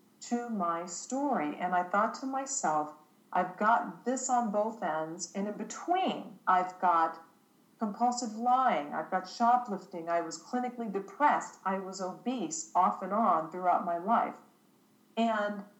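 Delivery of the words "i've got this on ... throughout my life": ordinary delivery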